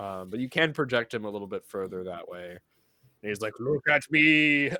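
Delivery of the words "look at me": very loud, booming, goofy, silly put-on voice. Voicing a projected figure for one listener, funny voice. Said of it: "I was just making a funny voice".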